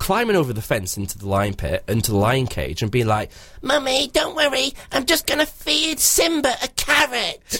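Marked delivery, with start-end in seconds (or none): 3.6-7.6 put-on very high, slow, small child's voice. Imagining a child climbing into the lion cage at the zoo, in a little kid voice. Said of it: "You always do that voice when you're hearing a kid".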